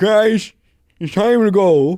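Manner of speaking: blurted out very high and loud. Voicing what Gilliman would say, coming out as a bad Joe Biden impersonation. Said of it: "that was like a bad impersonation".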